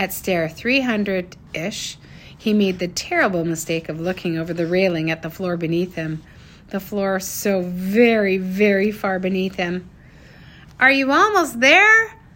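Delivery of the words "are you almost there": shrill, very loud, high-pitched shout. A woman calls to a man climbing a long staircase out of her sight, shouted. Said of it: "Sage shouted".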